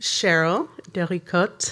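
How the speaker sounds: put-on French accent on a name. Introducing an artist to the audience: french accent on the name. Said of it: "I'm working the French accent for you".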